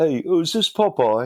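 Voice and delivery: very high, squeaky put-on British accent. Retelling a phone call from a caller: imitating a British accent. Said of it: "with a British accent".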